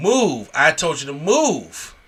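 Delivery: loud screaming with move stretched long. Retelling a wrestling mishap, the speaker imitates one performer screaming at another: imitating a scream. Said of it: "and just screams at him".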